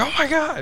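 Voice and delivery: excited, starstruck squeal. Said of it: "And I'll be like".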